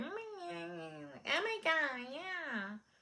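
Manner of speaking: tiny mouse voice, very high, very slow. Retelling what Courtney said, imitating Courtney's mousy voice. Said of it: "This little mouse, her voice is like".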